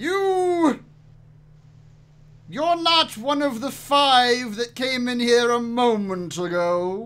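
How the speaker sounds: loud booming giant voice, long drawn-out "you". A game master voices a giant calling down to the party in a loud booming voice. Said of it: "a very loud, booming voice call out to you in giant".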